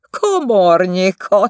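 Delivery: sneering, scornful tone. Narrator reads Stefi adding a remark to Etel, mocking and smiling. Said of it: "tette hozzá Stefi gúnyosan mosolyogva".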